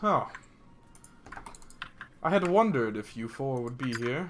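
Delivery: composed, very calm, level, even voice. Narrating a scene, voicing a figure who addresses the four companions, calm voice. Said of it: "in a very, like, calm voice, he says".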